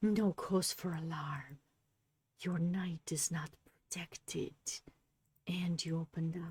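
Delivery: low, hushed whisper under the breath. Explaining chess moves to viewers, suddenly dropping into a whisper. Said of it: "I don't know why I'm whispering".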